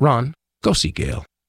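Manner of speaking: very calm, calmly spoken voice. Retelling a voice heard in the mind: imitating a very calm voice. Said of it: "very calmly".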